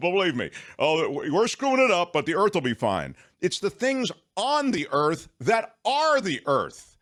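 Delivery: worked-up yelling, loud and high, heated ranting. Speaker getting on a soapbox while talking with Belinda, yelling. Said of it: "Why are you yelling?".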